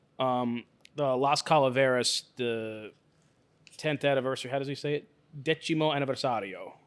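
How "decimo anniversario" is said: put-on Italian accent on Spanish words. Pronouncing a Spanish cigar anniversary name aloud, in an Italian accent. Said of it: "I know I said it in Italian accent".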